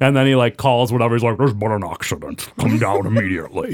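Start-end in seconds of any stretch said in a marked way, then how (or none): 1.4-3.7 put-on film-star voice, a little garbled. Retelling a movie scene where a character phones: Sean Connery voice. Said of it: "How was that Connery voice?".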